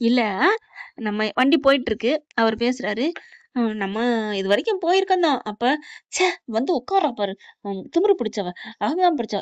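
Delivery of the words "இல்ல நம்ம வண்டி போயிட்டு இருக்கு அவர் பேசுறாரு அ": plain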